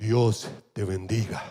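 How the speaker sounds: deep, prophetic blessing-style voice. Preacher shows the congregation how to bless someone, in a prophet voice. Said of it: "si quiere poner voz de profeta".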